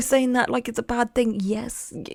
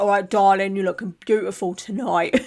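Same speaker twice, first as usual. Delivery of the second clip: mimicked builder lad type voice, lower; 3 semitones lower, 4 dB louder than usual. Imitating a builder lad who calls women darling at the pub. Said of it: "they're like".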